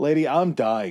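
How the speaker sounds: put-on matter-of-fact, glib, offhand delivery. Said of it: "Just so matter of fact and glib".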